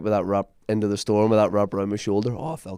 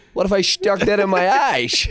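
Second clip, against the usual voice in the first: put-on very high, loud, old-time forties detective patter; 11 semitones higher, 6 dB louder than usual. Repeating another speaker's joke line back, in an old forties detective voice. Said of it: "saying that like an old uh, forties detective?".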